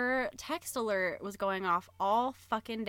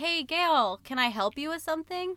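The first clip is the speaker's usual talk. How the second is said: mock straightforward, polite, friendly tone, pitched up; 7 semitones higher than usual. Retelling asking someone who keeps staring: imitating own direct, nice tone. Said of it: "in a direct, nice way".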